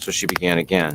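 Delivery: ordinary delivery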